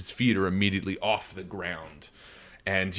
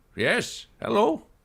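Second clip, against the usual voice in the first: put-on very high-pitched elderly man's voice; 13 semitones higher than usual. Voicing an old man who greets the four players: old man voice. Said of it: "you hear an old man".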